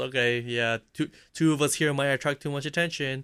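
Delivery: ordinary talk, nothing marked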